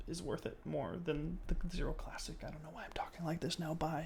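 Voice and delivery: soft, near-whispered trailing off.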